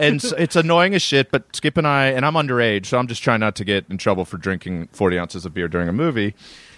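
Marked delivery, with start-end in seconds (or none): none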